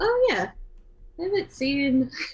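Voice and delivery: sudden surprised realization. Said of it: "she's like".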